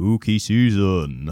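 put-on low-pitched regional English accent. Doing a requested impression of Alan Moore: Alan Moore voice. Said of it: "your best Alan Moore spooky season".

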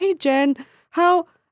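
high, loud, alarmed concern. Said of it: "they would be like".

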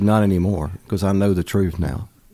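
ordinary talk, nothing marked

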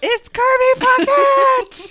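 shrill shriek, very high pitch, very high volume. Retelling how mom screamed on seeing a ballplayer at the airport: imitating mom screaming. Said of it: "my mom screamed".

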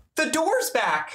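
very high, breathless, excited burst. Voicing Megan bursting into the room: out of breath and excited. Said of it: "out of breath, kind of excited".

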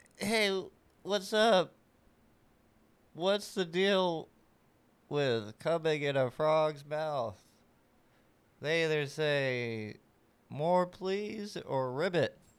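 ventriloquist dummy voice, words drawn out. Asked to play someone as a ventriloquist dummy, a performer tells a joke: ventriloquist dummy voice. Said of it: "Can you play me like a ventriloquist dummy?".

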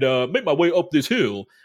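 ordinary talk, nothing marked

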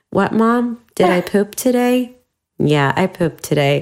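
sweetest, easy, unbothered delivery. Retelling how a teenager answered her mom's question: imitating a sweet answer. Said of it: "Just said it in the sweetest way".

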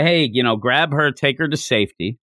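normal talking voice

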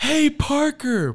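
very high, loud shrieked scream. Retelling how she screamed after Parker as he walked away: imitating someone screaming. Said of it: "She screams".

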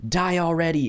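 very high-pitched screaming. Retelling a friend's game of Super Smash Brothers: imitating someone screaming. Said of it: "he hears him screaming".

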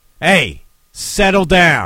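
very loud, firm, stern fatherly voice. Father retelling telling someone throwing a fit to settle down, retelling his dad voice. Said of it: "just with the dad voice".

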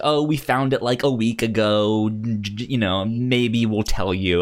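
plain

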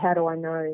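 ordinary talk

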